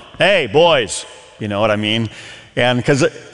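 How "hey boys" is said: authoritative teacher tone, raised and called out. Recounting stepping in while brothers screamed, addressing the boys in a teacher tone. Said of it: "like a teacher tone".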